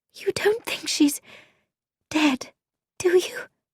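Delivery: quavering, trembling, frightened, shaky whisper. Reading a novel, Frankie asks Bobby a question in the car: shaky whisper. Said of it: "whispered Frankie in a shaky voice".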